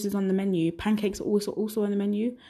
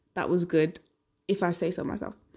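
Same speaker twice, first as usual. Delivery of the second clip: ordinary talk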